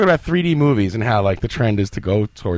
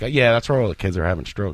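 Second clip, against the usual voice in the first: low, quick, slipped-in aside; 4 semitones lower than usual. Retelling how a woman slipped a remark into the conversation, low and quick. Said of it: "she sneaks into the conversation really like low and quick".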